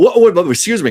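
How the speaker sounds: loud, high, startled outburst.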